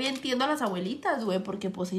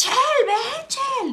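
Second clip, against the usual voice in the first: very high, loud, shrill hollering call; 12 semitones higher, 8 dB louder than usual. Retelling how your grandma yelled for you while you watched cartoons: retelling grandma's shout. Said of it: "que me gritaba".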